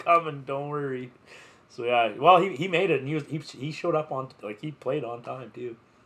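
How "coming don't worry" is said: mock southern accent with a twang. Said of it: "southern accent".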